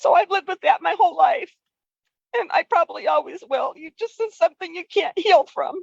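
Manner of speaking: voice breaking through tears. Apologizing for crying while sharing a personal story, speak crying while talking. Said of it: "I'm sorry for crying".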